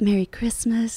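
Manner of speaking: sweet impersonated voice. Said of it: "in her sweet [name] voice".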